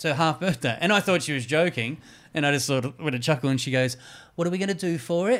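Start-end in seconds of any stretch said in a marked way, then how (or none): 4.3-5.4 serious delivery in a pitched-up voice. Retelling what a partner from England said: imitating partner's English voice. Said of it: "'cause I'm about to do her voice".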